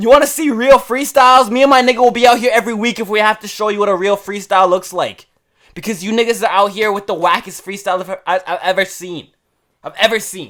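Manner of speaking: heated angry rant. Ranting at the freestylers out here, heated rant. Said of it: "I'm sorry I'm so heated".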